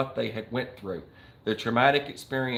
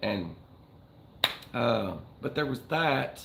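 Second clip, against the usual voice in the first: normal talking voice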